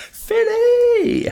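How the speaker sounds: very high, loud, excited shout. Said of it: "I just wanna go".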